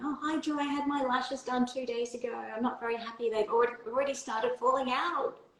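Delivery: acted-out high, alarmed, panicked voice. Retelling a text from a client about lashes falling out: imitating a panicking client. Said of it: "a text message from a client panicking".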